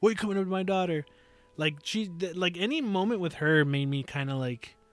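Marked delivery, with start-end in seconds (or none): 0.0-1.1 angry, confrontational, pissed-off tone. Retelling a game scene, Barrett gets pissed off: imitating Barrett angry. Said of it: "Barrett gets all pissed off".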